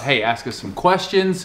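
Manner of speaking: ordinary delivery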